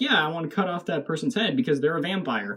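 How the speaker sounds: ordinary talk, nothing marked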